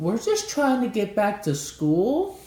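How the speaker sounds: very high, sweet, butter-wouldn't-melt innocent voice. Speaker retells their girlfriend, who was driving, answering a lady, imitating an innocent voice. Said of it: "in the most innocent voice possible".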